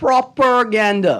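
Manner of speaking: strong stress on opening syllables proper- in propaganda. Calling a zine workshop pure propaganda: stress on 'proper' in propaganda. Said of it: "See how I put the emphasis on the proper?".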